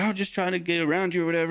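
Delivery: mock angry yelling. Telling a story of a road argument with another driver, retelling a yell. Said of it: "I'm like yelling".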